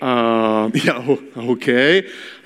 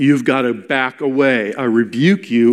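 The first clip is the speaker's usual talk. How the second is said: normal talking voice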